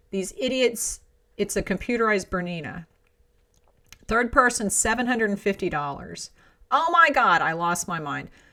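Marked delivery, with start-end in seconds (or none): none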